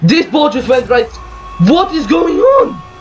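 high-pitched outburst, very high, mounting irritation, getting mad. A gamer watching the ball go wrong during game lag: getting mad. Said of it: "I'm actually getting mad".

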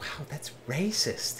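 quiet muttering. A player voices Torin reacting to a grumbling dwarf, muttering under his breath. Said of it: "Torin under his breath is like".

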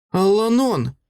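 sudden, high, called-out cry. Narrator reads Brin calling after the departing druid: cried out. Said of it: "вигукнула вона".

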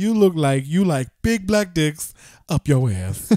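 leering, suggestive catcaller voice. Speaker retells being catcalled, imitating the catcaller's voice. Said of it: "you do the voice so perfect".

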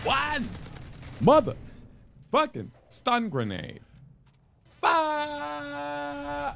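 high, over-the-top hype announcer voice.

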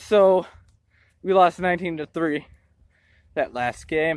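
out of breath, panting. Speaker greeting viewers right after losing a softball game, breathing hard. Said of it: "I'm sorry I'm breathing hard".

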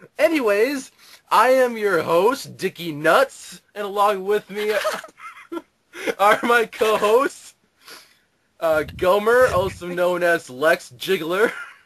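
giggling, barely holding together. Host introducing himself and his co-hosts, laughing while talking. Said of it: "I can't stop laughing".

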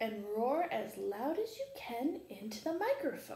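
plain reading voice

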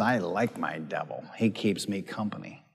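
very quiet, low, hushed creepy horror-movie voice. Retelling what a woman said as he tried to cast the devil out, Hollywood creepy voice. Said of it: "in this Hollywood creepy voice".

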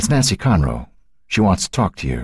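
ordinary talk

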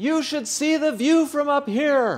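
shrill, very loud, high, ringing voice carrying far. Telling how she turned from the steps and called back to us; very loud call. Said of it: "in a very loud voice".

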